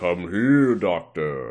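deep, low, booming voice. Retelling a scene from an episode where a voice calls the doctor: imitating a deep voice. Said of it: "he hears a deep voice say".

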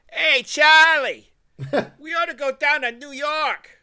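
mock Boston local voice. Imitating some guy in Boston talking to a friend: imitating a guy in Boston. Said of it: "some guy in Boston going like".

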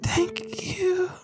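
high-pitched stage whisper. Voicing a dying woman slumped against the shooter: whispering. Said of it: "she just whispers".

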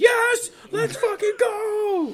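screaming, high-pitched, loud and celebratory. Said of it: "I'm gonna be screaming".

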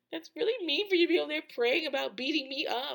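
acted tearful sobbing, high and rushed. Retelling a street incident, the speaker quotes a crying woman's complaint. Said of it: "she's crying".

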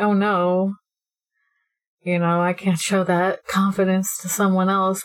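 ordinary delivery

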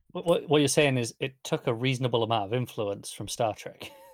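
normal talking voice

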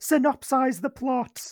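high put-on crowd shout. Acting out podcast listeners looking up at the hosts: mock shout. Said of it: "look up and shout".

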